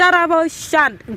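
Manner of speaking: high, bossy barked voice. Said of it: "I am used to giving instructions".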